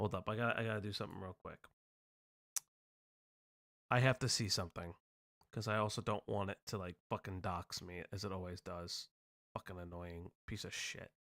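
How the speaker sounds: irritated, fed-up, annoyed tone. Just told they are most fun when annoyed, the speaker stops to check something: annoyed. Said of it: "You're the most fun when you're annoyed".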